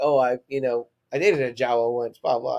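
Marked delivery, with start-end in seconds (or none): none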